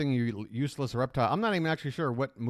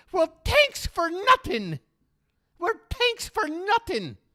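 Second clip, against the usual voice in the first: put-on strange, loud Irish accent, pitched very high; 6 dB louder than usual. Quoting the girl in Caddyshack replying to the caddy: weird Irish accent from Caddyshack. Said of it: "that girl with the really weird Irish accent".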